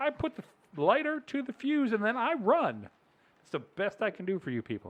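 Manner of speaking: put-on angry yelling. Retelling own reply to people after a firework mishap: retelling own angry reply, yelling. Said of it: "I feel like you're yelling at me".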